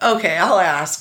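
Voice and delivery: patronizing, condescending, humoring tone. Retelling a helper's reply to a request: imitating a condescending, humoring tone. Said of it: "you could hear, like, "What an idiot you are."".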